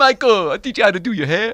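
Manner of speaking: put-on very high-pitched, very loud, belted Caribbean accent. Imitating an actor's line from Jaws four: Mario Van Peebles Caribbean accent. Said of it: "he sounded to me like Mario Van Peebles from Jaws four".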